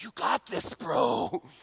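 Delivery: hushed, encouraging whisper. Retelling how his buddies whispered encouragement in his ear at a bar, retelling a whisper. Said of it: "whispering in my ear".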